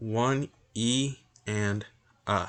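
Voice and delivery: very slow, drawn-out delivery.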